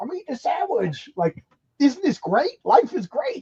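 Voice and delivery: delighted, thrilled high voice with swooping, swinging pitch. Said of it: "But I "Hey, Iggy, how you doing?"".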